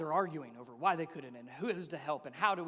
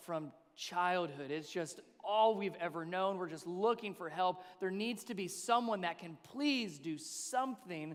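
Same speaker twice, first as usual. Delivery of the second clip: ordinary delivery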